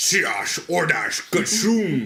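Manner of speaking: loud sci-fi movie alien voice. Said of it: "Can I do it almost like, uh, Star Trek, Star Wars".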